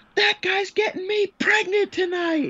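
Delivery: shrill, very high woman's shrieking scream. Retelling how a fan reacted to a game winner: imitating a woman screaming. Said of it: "one of the women stands up and screams".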